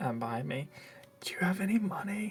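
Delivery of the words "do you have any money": quiet high-pitched whisper. Whispering to a companion standing behind, asking about money: whisper. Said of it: "I'm gonna whisper to Zeltron".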